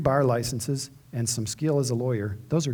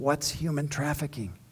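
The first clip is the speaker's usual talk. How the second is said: hushed half-whisper, under the breath; 2 semitones higher, 4 dB quieter than usual. Retelling leaning over at a break to ask: retelling a half-whispered question. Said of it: "I leaned over and whispered to him".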